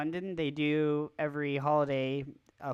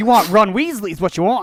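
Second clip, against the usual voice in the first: very loud, high-pitched, belted out; 5 semitones higher, 17 dB louder than usual. Imagining Rupert Grint bringing his ice cream truck over: Rupert Grint impression. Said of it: "And he's like".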